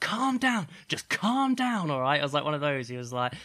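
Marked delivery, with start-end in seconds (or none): 0.0-2.2 high, loud, patronizing condescending tone. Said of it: "the other person's like".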